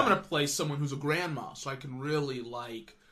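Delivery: ordinary talk, nothing marked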